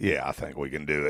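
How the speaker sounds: fake voice, very low and deep. Answering the question about doing a podcast on the side, in a put-on deep voice. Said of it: "throw that deep voice in there".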